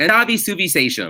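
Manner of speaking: put-on, flat American accent. Telling a story about a cousin who speaks to her grandmother, the speaker imitates how she says it, in a put-on accent. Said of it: "It's like Google Translate trying to".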